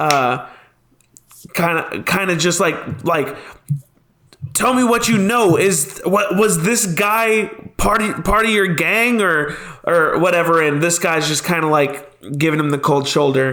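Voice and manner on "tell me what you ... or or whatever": pressing, demanding, raised character voice. Voicing a character questioning a captured man: raised voice. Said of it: "kind of voice raised at this human man".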